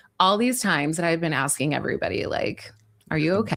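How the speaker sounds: words crackling in creaky vocal fry. Telling a story about asking everybody if they're okay: vocal fry. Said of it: "There's the vocal fry again".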